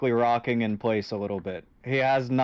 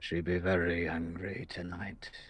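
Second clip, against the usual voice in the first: low, soft mutter, mumbled half to himself; 5 semitones lower, 9 dB quieter than usual. Voicing a tattered man rocking back and forth in a tavern, muttering. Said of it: "and he just mutters".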